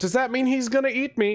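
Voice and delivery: high, terrified, frightened voice.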